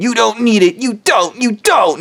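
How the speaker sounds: mock, insistent half-scream, mild yell with climbing pitch. Imitating rich people who deny others help: imitating someone screaming. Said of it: "them just screaming".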